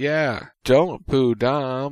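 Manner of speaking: slow, earnest, very sincere pleading voice. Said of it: "in a very sincere voice".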